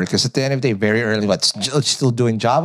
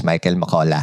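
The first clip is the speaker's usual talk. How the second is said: put-on non-American accent, lower pitch; 7 semitones lower than usual. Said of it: "I used to speak like this".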